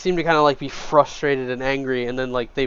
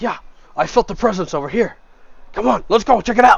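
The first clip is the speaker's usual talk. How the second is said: rough, gruff, menacing, aggressive, raised voice; 8 semitones higher, 6 dB louder than usual. The narrator voices an unseen speaker heard from the north: gruff, aggressive voice. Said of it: "it's a very gruff, aggressive tone in their in their voice".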